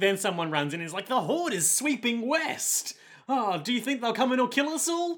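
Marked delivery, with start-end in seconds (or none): 1.1-5.2 put-on chipper, eager, enthusiastic tone, very high. Retelling what someone who runs in says, imitating an enthusiastic voice. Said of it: "Why does he sound so enthusiastic?".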